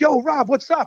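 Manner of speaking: pumped, high-energy voice. Role-playing greeting a high school buddy unseen for 20 years, high-energy greeting. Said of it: "I'm going to do this with high energy".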